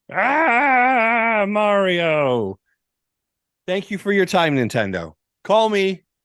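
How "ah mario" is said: pitched-up character voice, "ah" stretched long and high. Continuing the audition tape, now doing Wario: Wario impression. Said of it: "Here is my Wa-, Wario".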